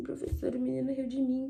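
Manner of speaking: mock sad little child's voice. Retelling telling the teacher that a boy laughed: imitating own sad child voice. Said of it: "eu entrei triste e falei com ela assim".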